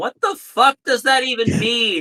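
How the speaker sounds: high, shrieking, screamed outburst. A player's character screams as he is being carried away. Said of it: "Yen screams".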